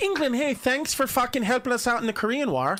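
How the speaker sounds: put-on Irish accent. A host thanking listeners in england, in a put-on irish accent. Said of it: "that's an Irish accent".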